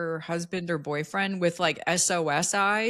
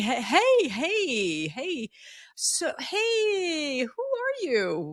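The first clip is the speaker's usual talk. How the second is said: put-on cool, very slow, drawn-out, swooping casual voice; 8 semitones higher than usual. Retelling running after lost visitors and greeting them, imitating acting cool. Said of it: "I'm trying to act cool".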